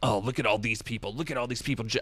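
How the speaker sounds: fast, rattled-off action-hero voice. Describing someone sitting online watching the world pass by, in a Solid Snake voice. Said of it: "I went right into my Solid Snake voice".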